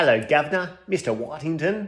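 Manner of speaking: attempted, would-be British accent. Greeting the chaplain after asking if he is British: attempted British accent. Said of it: "Was that supposed to be a British accent?".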